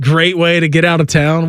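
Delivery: ordinary delivery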